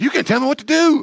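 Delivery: put-on defiant, rebellious child voice, very high, very loud, shrill. Showing how a child might answer a critical parent: rebellious child voice. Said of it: "That's the rebellious child".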